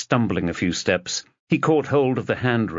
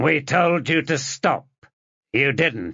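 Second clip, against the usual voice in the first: distorted, machine-like, hissing, pitched-up voice; 5 semitones higher than usual. Narrator reading an anonymous caller on the phone to Fenchurch: robotic, hissing, distorted voice. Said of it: "The same robotic voice, hissing and distorted".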